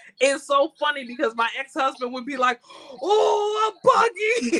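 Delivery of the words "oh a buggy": mock, very high, all-worked-up excited exclamation. Recalling an ex-husband spotting a horse buggy, imitating excited exclaiming. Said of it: "we would all get all excited".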